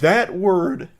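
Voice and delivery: high voice crack breaking mid-word on word. Commentator reacting to a word in a clip, voice crack. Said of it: "I had a big voice crack there".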